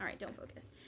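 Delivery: soft, hushed whisper under the breath.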